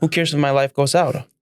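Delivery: normal talking voice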